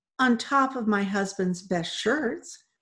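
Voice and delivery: ordinary talk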